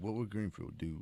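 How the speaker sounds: low, hushed, soft sexy voice.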